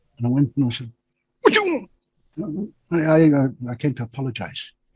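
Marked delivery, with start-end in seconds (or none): 1.4-2.7 gruff put-on voice, pitched up. Retelling the person who answered the door after the speaker knocked: gruff voice. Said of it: "this gruff voice goes".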